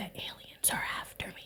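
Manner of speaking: mock whisper. Retelling what a caller said over the phone, imitating a phone whisper. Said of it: "he's like whispering in the phone".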